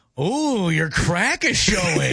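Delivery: mock sarcastic delivery. Trying out a sarcastic tone in a game of styles, teasing a friend about something showing. Sarcastic tone. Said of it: "You got to be sarcastic about it".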